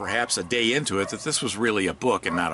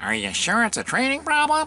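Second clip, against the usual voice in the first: very high, whiniest pleading whine; 3 dB louder than usual. Recounting a keynote's advice, acting out how not to question a client: mock-whiny voice. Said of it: "in your whiniest voice".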